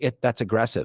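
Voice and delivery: ordinary delivery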